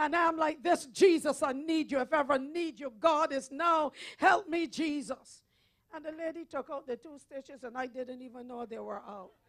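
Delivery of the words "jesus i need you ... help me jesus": mock desperate, tearful cry, slower. Retelling calling on Jesus while stitches were removed, retelling a tearful plea. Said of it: "I'm crying for dear life".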